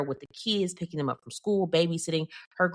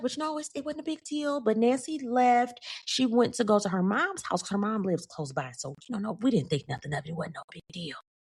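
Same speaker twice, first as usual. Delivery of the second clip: put-on unbothered, collected, cool tone, pitched up; 5 semitones higher than usual. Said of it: "she's just standing there cool, calm, collected".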